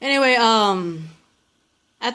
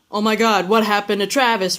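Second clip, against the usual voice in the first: ordinary talk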